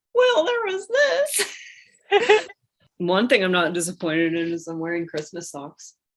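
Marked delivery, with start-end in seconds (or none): 0.2-2.5 very high, loud, stretched-out cartoon voice. Asked which physical features disappoint, answering in a Mickey Mouse voice. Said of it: "I'm gonna do it in my Mickey Mouse voice".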